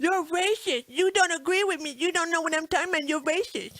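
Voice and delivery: derisive, scornful, high-pitched mocking caricature voice. Mocking the other side's response to the speaker's views: mocking imitation of a liberal. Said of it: "So them libtard roots are coming out".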